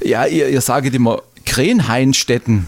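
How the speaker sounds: ordinary talk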